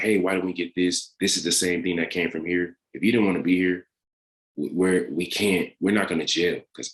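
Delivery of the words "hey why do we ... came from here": plain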